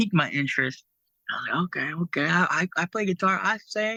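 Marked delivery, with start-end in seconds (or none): 1.6-4.0 put-on slow, pitched-up Southern drawl. Retelling own past words about playing guitar: Southern accent. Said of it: "I don't know why I went Southern for a second".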